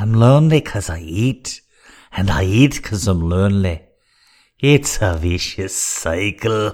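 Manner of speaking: loud, slow, drawn-out, hammed-up comic voice. Taking requests from chat, overselling a Mike Myers impression. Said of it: "go the Mike Myers route and just really, like, oversell it".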